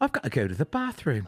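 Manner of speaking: put-on British accent in audiobook narrator style. Showing how their inner monologue sounds after a British-narrated audiobook, British accent. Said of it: "my internal monologue has a British".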